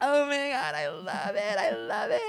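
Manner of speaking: put-on drunk gushing, very high and slow. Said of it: "she'd be so drunk".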